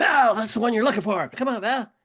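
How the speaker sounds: shrill, high, loud coach-style yell. Retelling a softball game, the other team's coach yelling at the batter: imitating Rizzo yelling. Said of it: "He's yelling at you".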